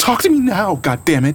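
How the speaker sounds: very high shout with voice cracking mid-yell. A woman demanding answers from the narrator shouts, her voice cracking. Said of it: "she shouted, her voice cracking".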